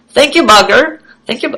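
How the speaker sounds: bad put-on Indian accent. Thanking someone for cleaning up his room, in a horrible Indian accent. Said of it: "That was a horrible Indian accent".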